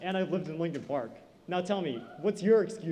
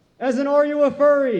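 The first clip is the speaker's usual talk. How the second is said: very loud, high, overconfident blurt; 9 semitones higher, 12 dB louder than usual. Retelling blurting out a name on stage: imitating own blurted-out overconfident line. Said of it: "I blurted out".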